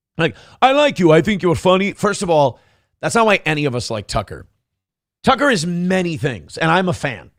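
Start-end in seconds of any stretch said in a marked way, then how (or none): 0.6-1.9 put-on catty, girly, bitchy, backhanded passive-aggressive niceness. Mocking another speaker's compliment by imitating it: mocking passive-aggressive imitation. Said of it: "it's so bitchy, girly, passive aggressive".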